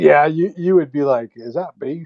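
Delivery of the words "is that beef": put-on botched, unconvincing Australian accent. Imitating someone asking about a burger: bad Australian accent. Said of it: "I can't do the Australian accent".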